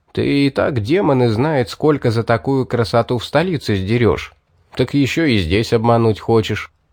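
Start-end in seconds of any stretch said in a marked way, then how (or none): none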